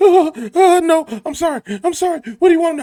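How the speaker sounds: very high, loud, screaming, begging tone. Describing someone threatened with a drill, speaker voices that person: imitating a screaming victim. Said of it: "And the person sitting there screaming".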